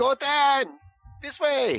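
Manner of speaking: shouting in character voice. Voicing a character during a shark fight, calling to an ally: shouting in character. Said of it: "shouting out".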